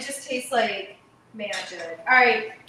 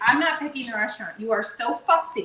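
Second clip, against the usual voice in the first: mock cutting, snippy, biting, sharp delivery. Retelling what she told her dad about picking a restaurant, retelling a biting remark. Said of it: "You hear the bite in my voice".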